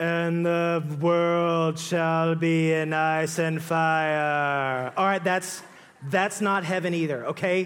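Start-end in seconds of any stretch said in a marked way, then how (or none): 0.0-4.9 very slow, flat monotone intoning, fire drawn out. Mocking the monotone lady in Lord of the Rings: monotone impression. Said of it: "weirdos who speak in monotone voices. Like the crazy lady in Lord of the Rings, where she's like".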